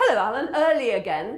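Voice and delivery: loud sarcastic tone.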